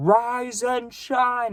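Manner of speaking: acted-out very high, shrill scream. Retelling how the man whose house you stayed at woke you: retelling a screamed wake-up. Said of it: "he would scream it".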